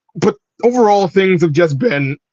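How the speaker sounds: breaking voice, cracking mid-line. Answering a chat question about how things are, the speaker's voice cracks. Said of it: "my voice cracked".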